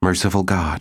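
plain reading voice

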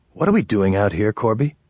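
ordinary delivery, nothing marked

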